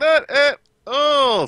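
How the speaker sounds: forced out through clenched teeth, very high. Role-playing a character asked to pay for a round, replying through gritted teeth. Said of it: "through gritted teeth".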